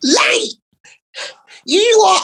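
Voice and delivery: squeaking, very high-pitched, squeaky voice. Retelling a man storming into the dressing room, squeaky Joe Pasquale voice. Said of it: "that squeak, Joe Pasquale voice".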